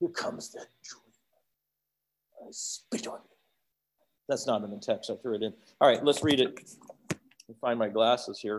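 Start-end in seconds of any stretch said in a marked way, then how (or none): 0.0-3.4 mock whisper, acted out, dripping with hatred. Voicing the brothers as the dreamer approaches, acting out dripping hatred. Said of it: "You hear that it's dripping with hatred".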